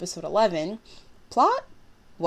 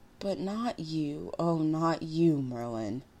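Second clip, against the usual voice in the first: soft, slow, drawn-out bitter tone; 2 semitones lower, 5 dB quieter than usual. Mordred speaks to Merlin, bitter. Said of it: "Mordred said bitterly".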